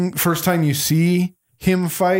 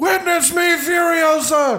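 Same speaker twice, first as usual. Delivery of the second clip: shrill, very high scream at the top of the lungs; 12 semitones higher than usual. Retelling seeing a famous woman walk by, speaker re-enacts shouting at her: retelling a scream. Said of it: "I screamed at the top of my lungs".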